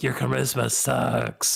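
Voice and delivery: whispering voice of an object. Voicing a cursed item that whispers insults to a player: whispering item voice. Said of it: "It's whispering to you".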